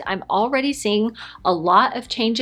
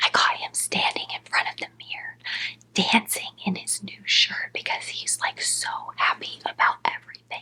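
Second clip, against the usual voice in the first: hushed whisper under the breath; 5 dB quieter than usual. Talking while the husband is at home, whispering. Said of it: "so I'm gonna whisper".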